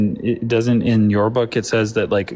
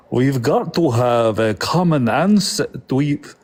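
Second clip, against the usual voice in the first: slow, deliberate, put-on Ukrainian accent; 4 semitones higher than usual. Joking with the others about being related, asked to do it: Ukrainian accent. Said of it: "Do Ukrainian accent".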